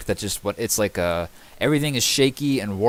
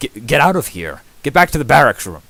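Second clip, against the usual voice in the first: quick, loud, barked delivery; 2 semitones higher, 7 dB louder than usual. Voicing a captain ordering a player out to the barracks: barking an order. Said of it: "quickly barks at you".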